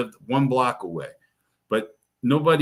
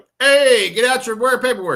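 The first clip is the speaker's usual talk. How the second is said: very high, very loud projecting call; 11 semitones higher, 7 dB louder than usual. Showing how they address the crowd, the speaker goes very loud. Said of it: "I'll go real loud, like".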